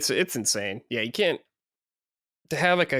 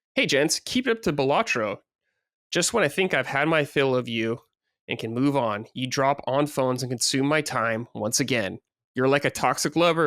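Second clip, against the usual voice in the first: ordinary talk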